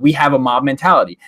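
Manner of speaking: normal talking voice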